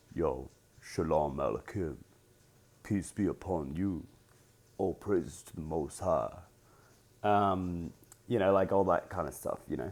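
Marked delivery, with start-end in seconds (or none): 0.1-6.3 low, soft voice placed down in the register. Demonstrating how low the voice can go, lower voice. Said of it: "I could bring it even lower".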